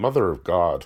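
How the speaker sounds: failed, bad attempt at an Irish accent. Quoting what a TV character often says, in a bad Irish accent attempt. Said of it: "I wish I could do an Irish accent".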